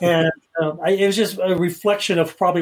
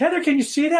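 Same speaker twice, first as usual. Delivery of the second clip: mock yell, pitched way up, urgent-sounding; 10 semitones higher than usual. Retelling an experiment, calling out to another person: imitating own yelling. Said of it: "I'm yelling at Heather".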